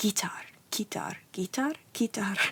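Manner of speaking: mock muttering under breath. Telling about the day of a TV appearance, the speaker repeats a word: retelling muttering under breath. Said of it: "all day under my breath, I was going".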